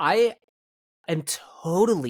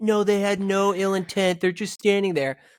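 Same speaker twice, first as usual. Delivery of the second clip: higher-pitched mocking impression voice. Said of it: "impersonation of Steve".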